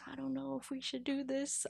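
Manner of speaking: very soft, hushed, worried murmur. Speaker acts out the owner reacting to Saquon leaving: John Mara's very soft voice. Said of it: "in his like very soft voice".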